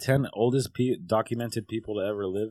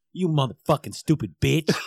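mock furious, loud, shrill swearing outburst; 5 semitones higher, 5 dB louder than usual. Retelling how John curses while fixing things: imitating someone cursing angrily. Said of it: "oh, you should hear him".

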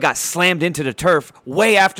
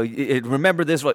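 ordinary delivery

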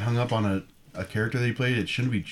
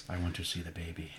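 weird, oddly patterned cadence; 4 semitones lower, 12 dB quieter than usual. Offering an impression to the group: Werner Herzog voice. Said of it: "I could do Werner Herzog".

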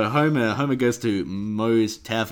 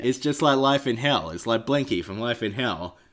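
usual speaking voice

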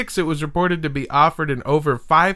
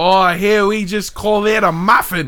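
loud, played-up, put-on Australian accent; 4 semitones higher, 5 dB louder than usual. Speaker shows off one of the only two accents they can do: put-on australian accent. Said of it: "This is an Australian accent".

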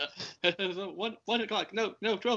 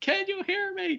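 mock yelling, much higher and slower; 13 semitones higher than usual. Retelling how a man yelled into a deaf man's ear: retelling a yell. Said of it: "And he's yelling in his fucking ear".

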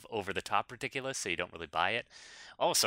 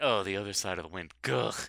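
mock weary, disappointed groan. Mimicking a co-host naming a movie: mock disappointed groan. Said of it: "listen to you right now, like".

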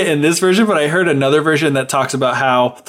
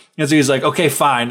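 usual speaking voice

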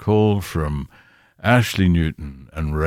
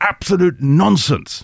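very high, raised-voice shout; 13 semitones higher, 5 dB louder than usual. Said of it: "you know I don't often raise my voice".

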